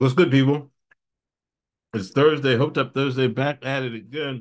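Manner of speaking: words pushed around a mouthful of food. Greeting listeners at the show's start, talking with mouth full. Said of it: "I had a mouthful of some".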